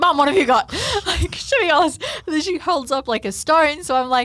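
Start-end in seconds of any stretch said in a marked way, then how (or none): 0.0-2.0 put-on urgent voice, higher and louder. Retelling asking mum what she got: imitating own urgent voice. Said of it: "there's this urgency in my voice".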